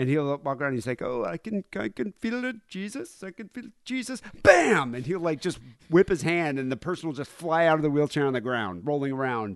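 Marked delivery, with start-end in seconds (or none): 1.0-4.2 put-on very high, drawn-out, slow Indian accent. Imitating a preacher feeling Jesus on stage: imitating Benny Hinn, Indian accent. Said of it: "he sounds like an Indian person".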